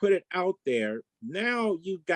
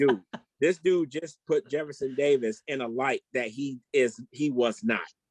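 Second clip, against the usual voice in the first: ordinary talk, nothing marked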